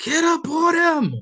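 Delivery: very loud, very high, shrill, drawn-out scream. Retelling a story of a coach on the sideline: imitating Phil Jackson screaming. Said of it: "Phil's on the sideline screaming".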